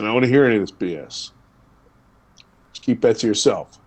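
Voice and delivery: mimicked low voice. Recalling what his father told him while parking, imitating dad's lower register. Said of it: "in that lower register".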